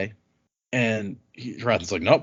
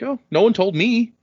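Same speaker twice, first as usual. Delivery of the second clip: deliberately dim, airheaded, high, dopey put-on voice; 8 semitones higher, 3 dB louder than usual. Retelling a book scene where a woman answers the king: imitating someone acting stupid. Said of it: "intentionally trying to sound extremely stupid".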